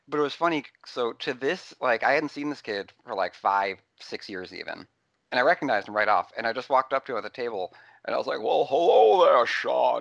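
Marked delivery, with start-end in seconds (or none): 8.4-10.0 slow, rough, raised, exaggerated Scottish accent. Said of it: "definitely more Scottish than Sean ever, Connery ever really sounded".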